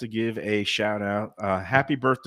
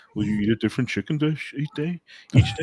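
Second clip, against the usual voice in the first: put-on voice, high, swooping and sing-song; 5 semitones higher than usual. Voicing a question that Sarnie asks, in a Sarnie voice. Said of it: "I'm doing my Sarnie voice".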